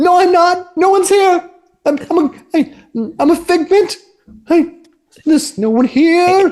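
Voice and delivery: stumbling, terrified, cowering voice, very high-pitched. In a tabletop game, a hiding man answers those who found him, cowering and frightened. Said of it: "unshaven man cowering".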